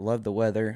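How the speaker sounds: ordinary talk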